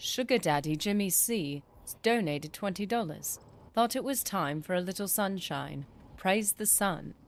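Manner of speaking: terrible, clumsy put-on British accent. Reading a viewer's donation alert aloud, bad British accent. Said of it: "So now I have to do this in a British accent".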